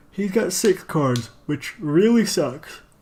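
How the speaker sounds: talking through a yawn. Commenting on a card game, the speaker talks while yawning. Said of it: "I'm sorry, I'm yawning".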